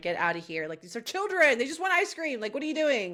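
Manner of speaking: put-on angry ranting. Retelling own reaction to Norman while watching, imitating own angry outburst. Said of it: "I was getting fucking pissed".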